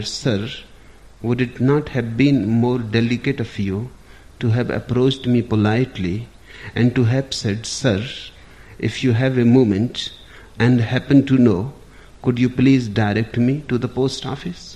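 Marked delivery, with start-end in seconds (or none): none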